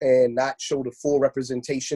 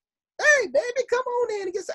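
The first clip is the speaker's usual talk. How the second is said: inviting auntie drawl, very high and slow. Asking whether aunties really talk like that: imitating an auntie. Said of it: "do we have aunties that really talk like that?".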